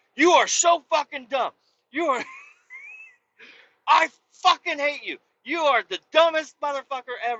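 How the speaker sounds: mock very high, shrill, swooping, raging furious rant. Retelling a car crash, the speaker quotes what they told the driver: retelling a furious outburst. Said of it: "I straight up lost my shit".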